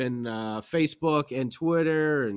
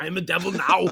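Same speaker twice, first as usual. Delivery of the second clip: put-on Austrian accent; 3 semitones higher than usual. Speaker repeats a line in Arnold voice. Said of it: "I say it in the Arnold voice, even though I am not from Austria".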